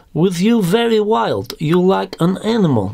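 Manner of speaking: put-on Russian accent, very high-pitched and drawn out. Quoting a woman's words in a story: Russian accent impression. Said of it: "my exquisite Russian impression".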